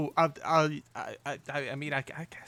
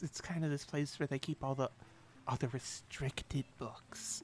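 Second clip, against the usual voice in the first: quiet, hushed whisper; 8 dB quieter than usual. A character explains the inner library to the party, whispering. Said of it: "She says in a whisper".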